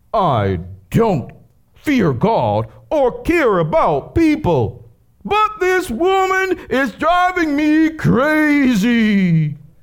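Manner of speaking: very high, sing-song, swooping, drawn-out voice. Reading a bible parable aloud: voicing the unjust judge. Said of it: "back to narrator voice".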